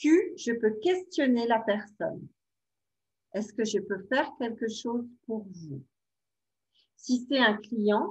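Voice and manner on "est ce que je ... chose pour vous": gentle, soothing, even, soft, calm voice. Demonstrating how to question an upset client, in a soft calm voice. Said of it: "avec une voix douce".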